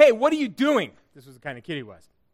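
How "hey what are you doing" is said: high-pitched, loud shout. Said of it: "him shouting up at me".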